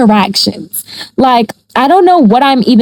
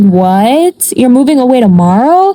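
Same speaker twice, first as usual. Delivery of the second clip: put-on frantic, freaked-out disbelief, drawn-out "what". Retelling hearing that a friend moves away tomorrow: imitating own freaked-out reaction. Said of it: "So I'm just going crazy".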